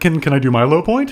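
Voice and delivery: ordinary talk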